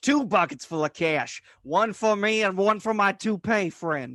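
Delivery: put-on bad old-movie thug voice. Joining another speaker's joke, in the worst possible impression of a thug. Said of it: "the worst possible impression of a thug".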